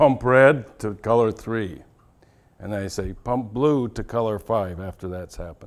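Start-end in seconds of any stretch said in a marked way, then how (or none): 0.0-1.8 very loud, stern, authoritarian tone. The speaker demonstrates how they give an instruction, in a very authoritarian voice. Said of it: "I say this in a very authoritarian voice".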